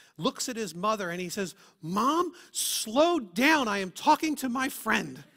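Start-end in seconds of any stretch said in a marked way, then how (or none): 1.8-5.2 put-on acted-out, loud, deliberate, indignant child voice. Retelling a child telling his mother to slow down: imitating an indignant kid. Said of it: "with indignation".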